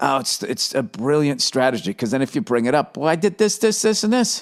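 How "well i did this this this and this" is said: higher-pitched yell. Retelling an argument over doing the chores: imitating own past yelling. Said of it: "Why are you yelling?".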